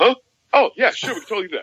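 squeaky, very high voice, mouth stuffed with food. Retelling a man answering across a stage: imitating talking with a mouthful of food. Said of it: "he's got a mouthful of food".

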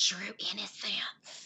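hushed whisper under the breath. Naming a perfume on a podcast: whispering. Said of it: "you can hear whispering, but I'm gonna try".

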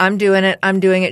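put-on voice, almost crying. Retelling a scared child insisting on a ride, imitating someone almost crying. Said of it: "She was almost crying".

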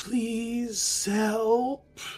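very high, faraway, ghostly echoing voice. A narrator voices a transparent figure holding out its hand: distant echoing voice. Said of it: "you hear a very distant echoing voice say".

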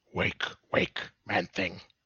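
harsh, hoarse, very raspy voice, hurried pace. A narrator voices an unknown speaker calling to the listener: very raspy voice. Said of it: "you hear a very raspy voice speak to you".

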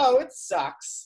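play-acted facetious, tongue-in-cheek joking tone. Retelling your answer to Adam Scott's question about working on The Awesomes, retelling a facetious reply. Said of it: "what I think is facetiously".

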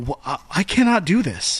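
normal talking voice

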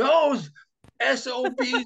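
acted-out furious rant, very high pitch. Retelling what he said when he came out to those listening at the door, retelling an angry rant. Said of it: "he starts right in".

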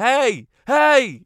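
put-on man's shouting. Retelling how a man followed them up the road, retelling a man's shouting. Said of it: "And he just kept shouting".

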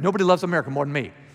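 plain

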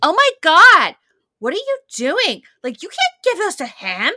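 very high, very loud, shrill, swooping berating. Recounting how Emily berates him without explanation, imitating Emily berating someone. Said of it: "she just goes with that tone".

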